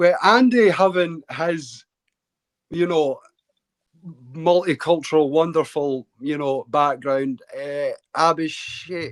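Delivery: slow, careful, toned-down speech. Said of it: "Tone it down, I'm speaking very slow".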